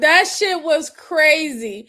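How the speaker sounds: holding back laughter. Reacting to deputies questioning someone, holding back laughter. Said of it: "I'm trying to hold back my laugh".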